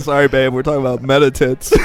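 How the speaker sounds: plain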